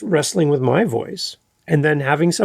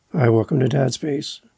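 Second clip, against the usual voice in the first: ordinary talk, nothing marked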